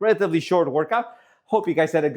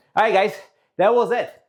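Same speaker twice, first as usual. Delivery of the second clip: winded, out of breath, catching breath; 4 semitones higher than usual. Wrapping up a workout for the viewers, out of breath. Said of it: "I gotta catch my breath".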